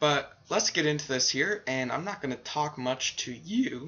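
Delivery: cracking, breaking voice mid-line. While showing how to set up computer commands: voice cracking. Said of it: "my voice cracked there".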